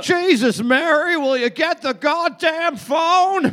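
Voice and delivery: put-on very high-pitched, old-Hollywood movie style voice. Quoting George Bailey's line about the phone: Jimmy Stewart voice. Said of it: "That was a great Jimmy Stewart".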